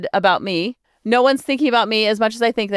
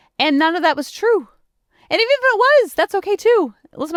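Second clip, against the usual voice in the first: voice rising high, then higher; 9 semitones higher than usual. Talking about a made-up story, voice getting very high. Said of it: "my voice getting so high now".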